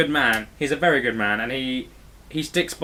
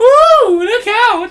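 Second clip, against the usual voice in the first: very high, loud creepy yell. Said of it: "That's his paedophile yell".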